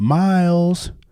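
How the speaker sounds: put-on woman's yell. Retelling a movie scene where a woman calls a boy: imitating a woman yelling. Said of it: "a woman yelling".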